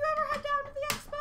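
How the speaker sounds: very high, fast, squeaky voice.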